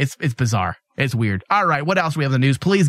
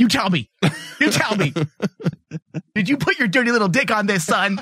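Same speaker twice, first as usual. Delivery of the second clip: stern, higher, scolding motherly voice; 7 semitones higher than usual. On a podcast, pressing Thomas for an answer, mock-scolding mother voice. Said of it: "It sounded like a mother a bit".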